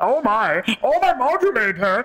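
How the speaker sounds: very high, squeaky cartoon voice, swooping up and down. Retelling what they did up there, in a Marvin the Martian voice. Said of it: "doing like Marvin the Martian having sex".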